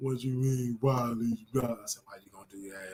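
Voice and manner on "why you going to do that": put-on deep voice, much lower, faster. Retelling what they said to a man, in a put-on deep voice. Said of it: "And I put my deep voice".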